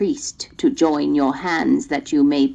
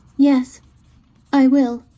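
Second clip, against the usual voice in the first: tremulous, trembling, very high-pitched voice; 10 semitones higher, 4 dB louder than usual. Narrator voicing the little princess answering the witch: trembling voice. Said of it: "said the little princess in a trembling voice".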